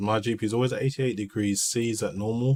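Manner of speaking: usual speaking voice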